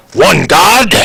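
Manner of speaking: acted, huge, very high, loud, shrill shout. Voicing a character who questions a cleric serving one god: super loud. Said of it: "And it's, like, super loud".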